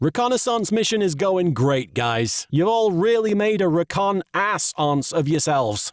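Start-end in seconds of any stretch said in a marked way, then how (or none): none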